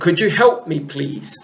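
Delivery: ordinary delivery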